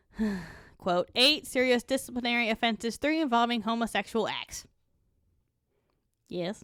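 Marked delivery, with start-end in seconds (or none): none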